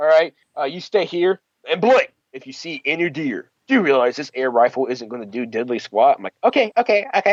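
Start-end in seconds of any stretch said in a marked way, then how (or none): 6.4-7.3 put-on squeaky, high, young-sounding voice. Retelling replying to him at the deer stand, in past self's high-pitched voice. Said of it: "With my high pitched voice at the time".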